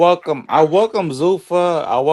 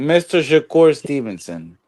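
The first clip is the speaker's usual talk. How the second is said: ordinary talk, nothing marked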